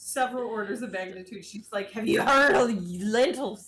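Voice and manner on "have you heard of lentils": mock full intensity, loud and pressing. Retelling being pressured to eat lentils: imitating Liz at full intensity. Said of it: "full intensity".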